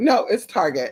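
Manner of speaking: ordinary talk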